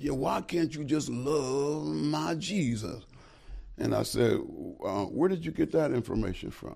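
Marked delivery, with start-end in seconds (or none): 0.0-3.0 slow, drawn-out put-on man's voice. Retelling a man asking why Muslims don't believe in Jesus, imitating the man's voice. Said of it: "I'm gonna imitate him".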